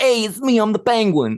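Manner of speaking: very high, squeaky, loud put-on voice. Starting a round of best impressions of The Penguin: Penguin impression. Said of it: "I'll start our best penguin impression".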